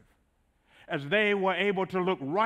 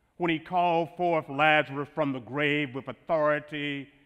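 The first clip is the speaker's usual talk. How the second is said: normal talking voice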